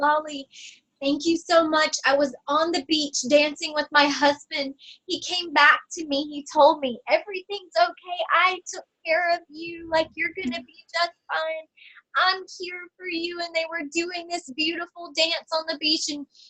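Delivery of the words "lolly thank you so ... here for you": play-acted tearful voice, spoken through tears. Retelling what a woman on the table said after a session, imitating someone crying. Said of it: "she started bursting in tears, and she goes".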